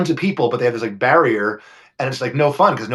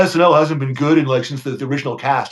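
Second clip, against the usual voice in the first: put-on dopey, dim dumb guy voice. Imitating people who claim SNL was only good early on: dumb guy voice. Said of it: "It's called dumb guy voice".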